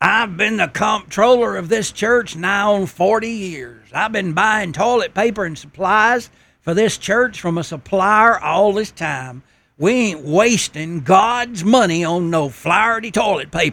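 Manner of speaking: rough, gruff, rough-edged tone. Retelling how the church comptroller stood up and objected, gruff tone of voice. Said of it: "in a gruff tone of voice".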